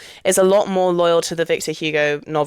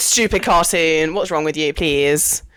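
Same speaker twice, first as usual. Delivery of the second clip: usual speaking voice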